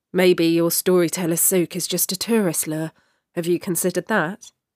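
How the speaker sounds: plain reading voice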